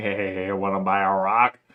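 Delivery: put-on croaky, low, raspy old-man voice. Reading a story where a voice calls from outside during dinner, raspy Jim voice. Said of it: "a raspy voice coming from outside saying".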